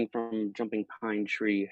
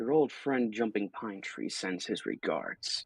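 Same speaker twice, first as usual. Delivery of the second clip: close, confidential, soft whisper; 5 dB quieter than usual. Whispering into a character's ear during a fight: whispering in character. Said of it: "whisper in Starosta's ear".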